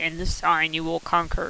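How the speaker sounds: ordinary talk, nothing marked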